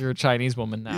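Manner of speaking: ordinary talk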